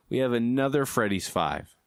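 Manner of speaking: ordinary talk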